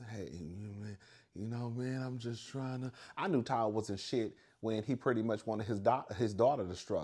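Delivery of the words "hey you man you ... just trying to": meek, timid, soft little voice. Mocking Todd from reality TV shows, imitating Todd's timid voice. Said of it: "that timid ass voice".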